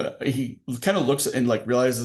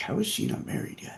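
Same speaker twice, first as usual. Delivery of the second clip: muttered quietly under breath, quieter; 7 dB quieter than usual. Voicing a character whom only one person overhears: muttering under his breath. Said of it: "under his breath".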